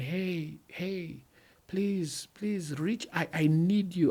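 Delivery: high, drawn-out, pleading, desperate cry. Acting out a neglected spouse asking for help: imitating a spouse crying out. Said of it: "my spouse is crying out saying".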